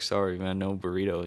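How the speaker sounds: put-on, very sad, mournful apologetic voice. Retelling what the guy at the drive-through said: imitating someone sounding sad. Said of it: "the guy sounded so sad".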